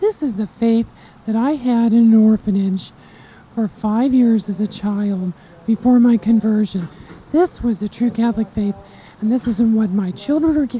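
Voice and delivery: ordinary delivery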